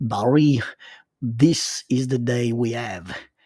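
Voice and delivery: put-on bad French accent. Retelling a story, the speaker quotes Troy's line in Troy's bad French accent. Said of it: "his famous bad French accent quote".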